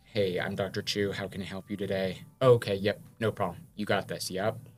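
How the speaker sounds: low, flat, even, toned-down professional doctor voice. A doctor shows how they greet patients at work, lowered, flattened voice. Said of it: "I have to lower, so I have to be like".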